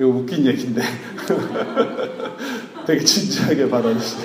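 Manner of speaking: amused, laughing through the words, fast at first.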